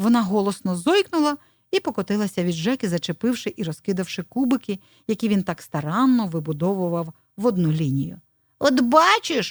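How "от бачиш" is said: loud shouted exclamation. A squirrel, pricked by a hedgehog's spines, shouts at him. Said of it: "закричала білочка".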